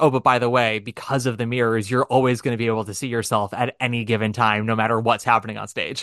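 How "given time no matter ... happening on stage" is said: ordinary talk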